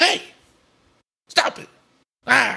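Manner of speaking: very high, slow, creaky squeak, drawn out. Showing another speaker an impression of Kevin Hart: Kevin Hart impression. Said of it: "This is my impression of Kevin Hart".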